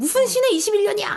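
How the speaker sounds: play-acted shrill, very high, furious, indignant retort. Retelling a film character's retort about the year: imitating a furious outburst. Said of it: "엄청 화를 내면서, 역성을 내면서".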